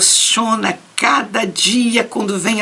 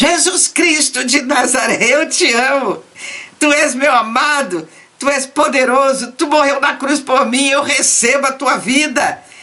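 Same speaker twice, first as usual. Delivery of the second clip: slow, loud, drawn-out shouting; 4 semitones higher than usual. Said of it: "daqui a pouco você começa a gritar".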